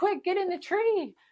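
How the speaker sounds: shrill, very high, urgent shout. Retelling a scene where a character yells to hide: imitating Peeta yelling. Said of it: "'cause he was yelling".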